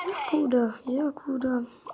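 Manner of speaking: soft, whispered voice.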